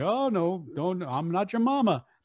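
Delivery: Saturday-cartoon bear character voice. Retelling a cartoon, the speaker answers the other character's plea in Yogi Bear voice. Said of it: "Yogi Bear would always say".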